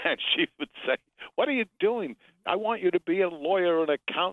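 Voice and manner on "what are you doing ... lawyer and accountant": high, upset motherly voice. A guest retells what his mother said when he brought Variety home, imitating his upset mother. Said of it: "My mother was very upset".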